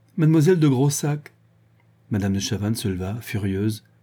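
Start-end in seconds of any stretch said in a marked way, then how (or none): 0.2-1.4 laughing through words, much higher pitch. Reading a novel aloud, Yvonne answers the marquis's question, laughing. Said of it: "Yvonne répondit en riant".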